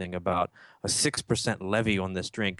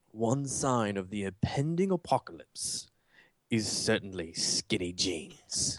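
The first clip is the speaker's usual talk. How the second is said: bad, deliberate, slow fake British accent; 3 dB quieter than usual. Quoting his line about modern clothing in a bad put-on British accent. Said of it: "I'm going to do it in a British accent. It's going to sound bad".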